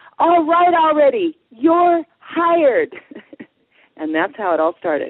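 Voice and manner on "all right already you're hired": big, loud, high, slow and drawn-out delivery. Retelling how a woman finally hired the speaker, imitating her saying it loudly. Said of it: "says really loudly".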